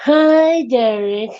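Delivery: mock sarcastic, condescending, drawn-out, patronizing tone. Recounting a scene where one man greets another, mock-patronizing, sarcastic. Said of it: "talks to him very like patronizing and sarcastically".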